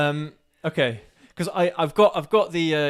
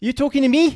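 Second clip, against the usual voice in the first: very high, loud, put-on Irish leprechaun accent; 11 semitones higher, 5 dB louder than usual. Taking your go at doing a voice, trying to sound like a leprechaun. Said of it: "I'm trying to sound like a leprechaun".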